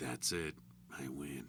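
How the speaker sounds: put-on gravelly voice. Praising Jared's voice for a character, quoting the line in his gruff, gravelly voice. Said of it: "he's got it's real gruff and gravelly".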